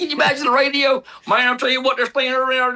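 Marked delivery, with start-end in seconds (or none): 1.3-2.8 put-on West Virginia country accent. Imagining a driver on the radio: west virginia accent. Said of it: "that West Virginia accent".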